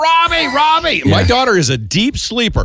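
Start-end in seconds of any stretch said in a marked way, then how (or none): 0.0-1.0 piercing, very high-pitched scream. Speaker recounting shouting a name in the night, retelling a scream. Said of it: "Because I was screaming".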